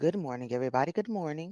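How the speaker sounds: very low-pitched, very soft, hushed broadcaster delivery. Starting the show over, greeting everybody in a put-on broadcaster voice. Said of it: "I had to put on my uh broadcaster voice".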